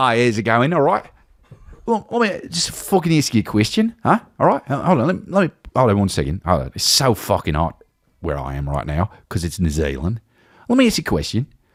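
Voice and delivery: swooping pitch, rambling, sweary rant. Imitating Sam Neill calling his agent about Conclave: Sam Neill impression. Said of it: "Sam Neill goes like this".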